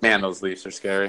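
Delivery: ordinary talk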